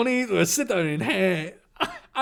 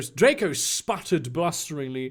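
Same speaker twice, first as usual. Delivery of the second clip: usual speaking voice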